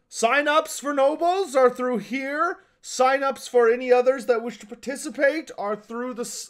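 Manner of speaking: obnoxiously loud, high, blaring shout. Game master voicing a man pointing out the sign-up buildings: obnoxiously loud shout. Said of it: "obnoxiously loud shout".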